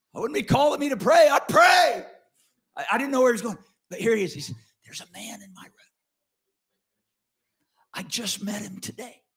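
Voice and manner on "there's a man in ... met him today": put-on whisper, quieter. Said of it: "He's whispering on the call".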